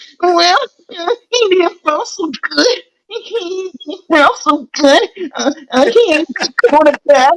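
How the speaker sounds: mock high, sobbing crybaby whine. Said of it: "all these crybabies that say".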